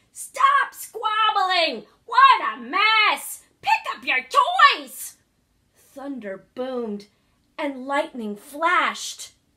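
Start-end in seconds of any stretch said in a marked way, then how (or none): 0.2-5.2 piercing full-volume shout, very high pitch. A narrator reads a toad yelling inside her cottage as someone passes: yelling. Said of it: "he heard her yelling inside".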